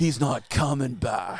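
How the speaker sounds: slow, put-on Australian accent. Quoting a line from the movie, put-on australian accent. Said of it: "it's a flawless Australian".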